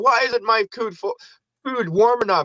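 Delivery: sarcastic, snide put-on voice. Acting out a customer complaining to a fast-food robot: mock sarcastic customer complaint. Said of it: "our sarcasm".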